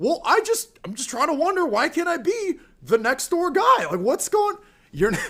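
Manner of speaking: very high put-on voice with swooping pitch. Mocking how a TV host talks: imitating Tucker Carlson. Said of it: "he's always talking like".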